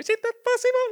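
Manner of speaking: very high, squeaky mocking voice. Retelling a film scene where a character mimics his wife: squeaky mocking voice. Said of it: "Pone como la voz de pito así".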